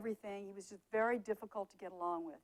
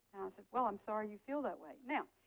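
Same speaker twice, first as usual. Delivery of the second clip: ordinary talk, nothing marked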